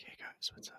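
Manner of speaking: hushed, breathy, barely voiced, very quiet asmr whisper. Describing an imagined asmr video greeting viewers: mock asmr whisper.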